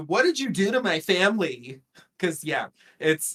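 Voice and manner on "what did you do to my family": normal talking voice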